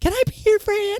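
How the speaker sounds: squeaky, very high-pitched teasing voice. Re-enacting a line from the video: mocking imitation of her. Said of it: "Even impersonating her, even mocking her".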